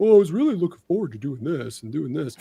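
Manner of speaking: griping, complaining voice. Discussing a game dropping on Game Pass, mimicking what the internet complained; impression of internet complainers. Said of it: "that was such a good impression".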